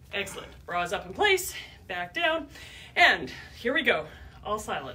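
ordinary delivery

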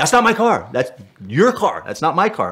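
high, loud, angry, insistent voice.

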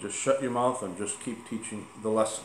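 ordinary talk

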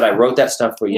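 ordinary delivery

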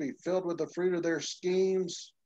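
ordinary talk, nothing marked

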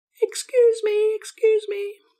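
tiny, very high, mouse-like squeaky voice. Demonstrating in a video lesson on describing voices, squeaky voice. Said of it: "A squeaky voice".

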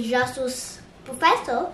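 ordinary talk, nothing marked

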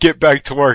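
ordinary talk

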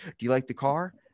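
ordinary talk

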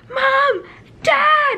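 very high, all-out shriek at the top of the voice. Retelling getting the blue tick and calling for her parents: retelling screaming at top of voice. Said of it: "screaming at the top of my voice".

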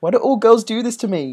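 mock heartbroken whine.

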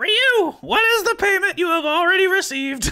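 very high, goofy, silly female narrator voice. Showing that the Irene narration voice matches the Deedlit voice: silly female voice for Irene. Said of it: "my Irene narration voice is the same as my Deedlit voice".

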